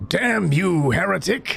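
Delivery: high-pitched, hissed, cursing tone.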